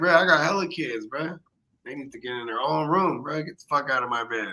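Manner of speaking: normal talking voice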